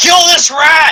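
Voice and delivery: very high, loud, put-on character yell. Warning the party in character during a rat fight: yelling in character. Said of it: "so you yell".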